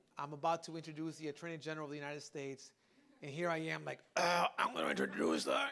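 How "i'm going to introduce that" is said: voice dropped way down and projected. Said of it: "people in the audience got the [name] Mexican version".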